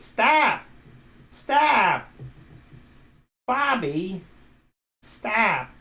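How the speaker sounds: swooping sing-song stahp. While struggling with a stubborn nut, the speaker speaks in a Linda Belcher voice. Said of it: "That's how Linda Belcher pronounces it".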